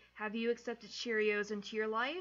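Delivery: plain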